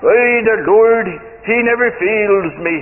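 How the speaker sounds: speaking in a put-on South African accent. Quoting a man about his Bible, the speaker uses his South African accent. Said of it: "in his South African accent".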